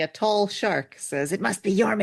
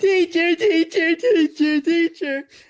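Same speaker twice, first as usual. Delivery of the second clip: very high, loud animated cartoon child voice; 10 semitones higher, 6 dB louder than usual. Voicing one of the children on the first page, in an animated child voice. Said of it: "my best to animate child voice".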